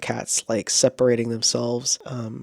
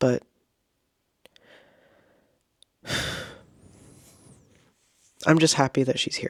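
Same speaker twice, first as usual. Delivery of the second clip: teary, on the verge of crying; 2 semitones higher than usual. Speaker describing caring for her, holding back tears. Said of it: "I'm trying not to cry".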